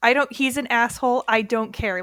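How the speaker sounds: normal talking voice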